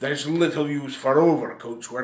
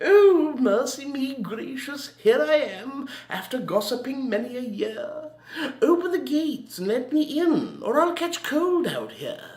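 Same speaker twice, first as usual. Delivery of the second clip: very high-pitched put-on English old maid voice; 12 semitones higher than usual. Telling a joke, voicing an old maid from england: put-on english old maid voice. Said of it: "Then came an old maid from England".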